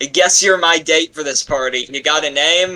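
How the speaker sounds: loud calling out, projected as if across a distance. Playing a character who is being chased, shouting in character. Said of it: "I'm gonna shout out".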